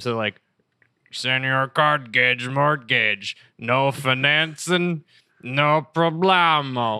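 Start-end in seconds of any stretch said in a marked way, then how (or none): 1.1-7.0 slow, lame cartoon voice. Recalling a commercial in a show, doing the masked character's line in a lame Strong Bad voice. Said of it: "his voice is like Strong Bad, but like lame".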